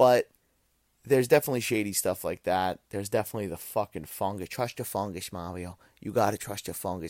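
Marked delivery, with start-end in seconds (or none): 4.5-7.1 loose, rough, half-hearted actor voice, not quite nailed. Quoting a movie line in a John Leguizamo impression. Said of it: "that's my John Leguizamo".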